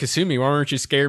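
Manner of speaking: ordinary delivery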